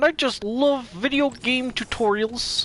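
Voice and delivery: put-on frog puppet voice. Joking about video game tutorials in a Kermit the Frog voice. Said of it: "Kermit the Frog here".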